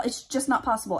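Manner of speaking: ordinary delivery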